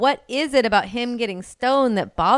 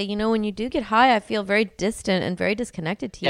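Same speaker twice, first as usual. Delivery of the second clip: ordinary talk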